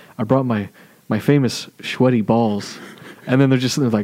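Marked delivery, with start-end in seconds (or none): 0.2-2.8 calm, even, totally unbothered radio voice. Retelling an SNL radio-show skit, imitating Pete Schweddy's calm talk. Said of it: "very calmly talking the whole time like this".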